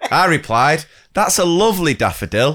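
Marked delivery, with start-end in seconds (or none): 1.9-2.6 heavy emphasis leaning hard on the word daffodil. Reading out a story, quoting a teacher's reply: retelling stress on DAFFODIL. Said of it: "with emphasis on the word daffodil".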